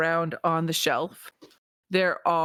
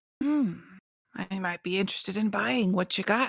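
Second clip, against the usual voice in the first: put-on stage whisper; 2 semitones higher than usual. As Winston, answering an offer to sell some items, Winston's whisper. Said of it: "Winston just kind of always st- talks in a whisper".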